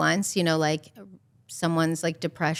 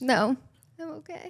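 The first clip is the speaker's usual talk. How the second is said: high voice, on the verge of crying; 8 semitones higher than usual. Declining tissues while talking about something painful, close to tears. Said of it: "don't cry".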